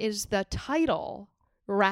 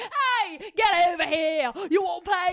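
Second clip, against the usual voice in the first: put-on Cockney carnival worker accent; 8 semitones higher, 4 dB louder than usual. Speaker recalls carnival game workers in brooklyn calling out: cockney carnie accent. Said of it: "they all had like Cockney accents".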